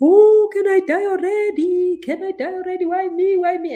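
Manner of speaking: put-on very high, slow, sobbing crying wail. Speaker describes crying for five minutes, imitating own crying. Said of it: "I cry like five minutes of just like".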